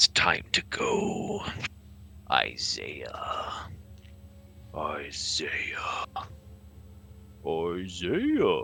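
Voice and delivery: guttural, slow, drawn-out breathy whisper. Game master voicing Mowgli the Skull speaking to Isaiah in a dark cell; guttural voice. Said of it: "You hear a guttural voice and a rattle".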